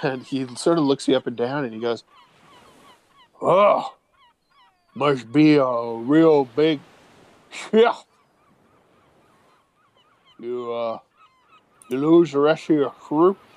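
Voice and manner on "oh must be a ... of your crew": toothless voice, slow and swooping. Voicing a toothless man questioning the party: toothless man's voice. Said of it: "you realize he has no teeth at all".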